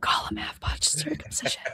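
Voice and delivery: softly whispered. Saying a phrase after asking if it can be whispered: whispered. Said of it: "can I just whisper it?".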